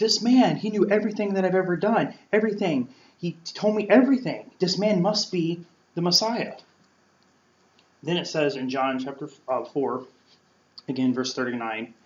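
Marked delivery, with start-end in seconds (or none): 0.0-6.5 play-acted, high-pitched shout at full volume. Retelling a woman running back into town, imitating someone shouting. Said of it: "she starts shouting".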